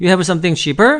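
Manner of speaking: voice lifts at the end, rising on "cheaper". English lesson on asking without do: rising question intonation. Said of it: "do를 빼도 이렇게 의문 끝으로 올려주면 의, 의문문이 됩니다".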